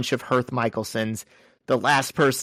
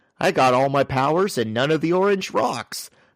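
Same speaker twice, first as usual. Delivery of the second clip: dopey, hulking, big dumb rock monster voice; 3 semitones higher than usual. Recapping a story, quoting what Ben says after the reunion, as a big dumb rock monster. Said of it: "your impression of him, he still talks like a big dumb rock monster".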